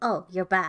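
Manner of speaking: put-on smug, self-satisfied tone of voice. Retelling getting up in a smug pose: imitating own smug tone. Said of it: "I get in my smug, uh, pose".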